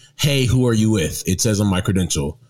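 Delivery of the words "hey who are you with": usual speaking voice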